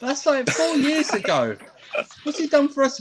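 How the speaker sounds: incredulous, high-pitched outburst.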